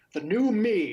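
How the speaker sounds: big, loud, booming voice. Game master voices someone calling from across the room: loud booming voice. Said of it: "a loud, booming voice".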